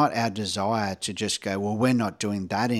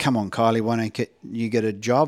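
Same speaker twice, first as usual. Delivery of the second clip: put-on frustrated, challenging voice; 3 dB louder than usual. Retelling challenging Kylie about getting a job: imitating own frustrated challenging voice. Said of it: "That voice that I challenged you with".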